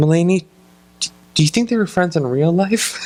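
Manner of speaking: mock weepy, sobbing, high tearful crying voice. Retelling a sitcom scene where the character is crying: imitating Motif crying. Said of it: "and he's crying".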